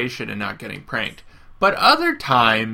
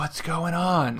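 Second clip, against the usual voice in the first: very soft, hushed, secretive half-whisper; 4 semitones higher, 5 dB quieter than usual. Recapping a cartoonish scene, quoting one character half-whispering to another, retelling a half-whisper. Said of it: "she's like whispers to Screech".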